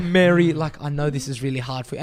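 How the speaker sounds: usual speaking voice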